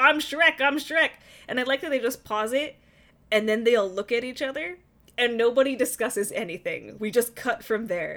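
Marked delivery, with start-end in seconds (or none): 0.0-1.1 loud, high-pitched yelling. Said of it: "He's yelling, like".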